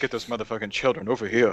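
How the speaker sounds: very deep, low put-on voice. Imitating a man who talks really deep, imitating a very deep voice. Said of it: "he's really deep like this".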